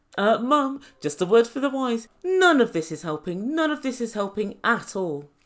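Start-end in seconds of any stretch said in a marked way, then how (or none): none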